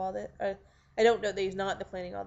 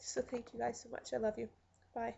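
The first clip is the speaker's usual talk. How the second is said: crying, weepy, tearful voice; 3 semitones higher, 7 dB quieter than usual. Speaker thanks supporters for backing her and signs off, crying. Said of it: "now that I'm crying".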